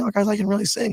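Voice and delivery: high, worked-up voice.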